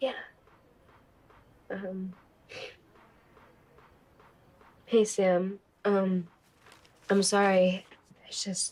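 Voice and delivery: tearful speech, crying while talking. Apologizing to sam after being asked if okay: crying while talking. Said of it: "Why are you crying?".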